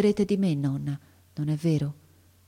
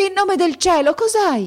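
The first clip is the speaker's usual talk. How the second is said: very loud, very high, shrill, desperate, frantic outcry; 13 semitones higher, 8 dB louder than usual. An old woman calls to the boy collapsed on her knees, crying out frantically. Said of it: "gridò la vecchia palpando affannosamente".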